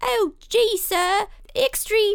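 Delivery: put-on very high, slow old-timey newsboy accent. A co-host clarifying the first mini-sode's theme, in an old-timey newsboy accent. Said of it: "Are you trying to do the accent of a newsy boy".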